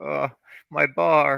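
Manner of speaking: mock loud, very high, agonized wail. Recalling seeing a bar get destroyed, speaker imitates the agony in Bruce's voice. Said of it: "the agony in his voice".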